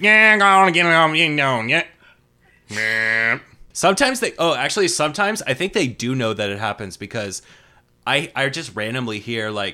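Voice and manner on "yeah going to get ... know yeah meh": very loud, high, slurred, garbled, swallowed mumble. Imitating people on the radio who are hard to understand: imitating unintelligible mumbling. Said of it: "if you can't even understand them sometimes".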